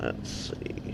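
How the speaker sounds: unvoiced whisper, as an aside.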